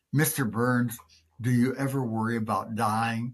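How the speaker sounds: normal talking voice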